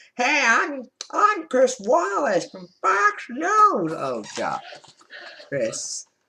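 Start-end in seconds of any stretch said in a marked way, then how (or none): 0.2-3.9 very high, very slow, drawn-out put-on annoying news anchor voice. Mocking a debate moderator's voice: annoying Chris Wallace voice. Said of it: "one of the most annoying voices".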